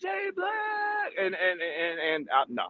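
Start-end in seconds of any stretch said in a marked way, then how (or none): 0.0-1.1 very high, crowd-style shout. Retelling how people reacted on seeing someone: imitating people shouting out. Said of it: "They were shouting out".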